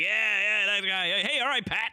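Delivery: very high-pitched, outgoing, gregarious tone. Retelling how a guy greets him by a nickname: imitating a gregarious guy. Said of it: "like, gregarious".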